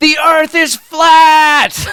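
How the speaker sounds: very high, shrill shriek, last word stretched. Describing a woman screaming in a hangar, retelling a loud scream. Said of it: "and then she just screams".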